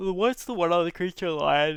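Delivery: loud, high-pitched, spoken through a yawn. Discussing a card during a game, asking a question, yawning while talking. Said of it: "sorry, yawning here".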